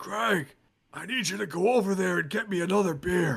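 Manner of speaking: put-on rough, gravelly voice. Describing how a man sounds, the speaker imitates him in a gravelly voice. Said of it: "it's gravelly".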